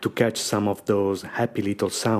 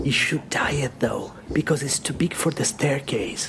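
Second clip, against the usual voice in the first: hushed, high-pitched whisper; 6 semitones higher than usual. Retelling what a friend's mother said about the speaker: imitating a whisper. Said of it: "And then she whispers".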